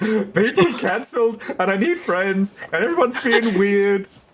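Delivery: play-acted tearful, very high-pitched sobbing speech. Retelling a past stream-night panic about missing players: imitating own past sobbing. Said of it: "sobbing on a Friday being like".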